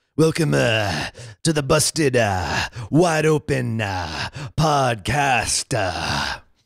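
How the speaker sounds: fake slow gravelly, grizzled drawl. Welcoming listeners to the podcast in a put-on grizzled voice. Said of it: "Going for that grizzled voice sound".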